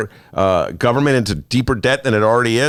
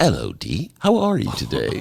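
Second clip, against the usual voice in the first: put-on slow, sing-song voice with a British accent; 3 semitones lower, 5 dB quieter than usual. Greeting a co-host as a joke: Fleabag imitation. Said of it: "now I'll do my Fleabag imitation".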